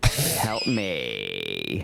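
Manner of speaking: very low, deep creaky vocal-fry bear voice. Speaker voices an imagined mutant bear, in mutant bear vocal fry. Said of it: "the mutant bear would have the vocal fry too".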